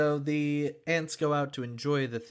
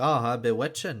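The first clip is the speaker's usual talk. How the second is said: put-on Scottish accent; 4 dB louder than usual. Imagining how a Scottish person would say the line: Scottish accent. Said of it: "I can just hear a Scottish person be like".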